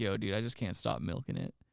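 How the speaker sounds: mock talking while crying a little, swooping pitch. Retelling a late-night phone call from a friend: imitating Adam crying. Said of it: "crying a little bit".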